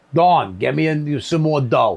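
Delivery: strong, pure New York accent. Showing how someone would say a name, in a new york accent. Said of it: "coming out pure New York".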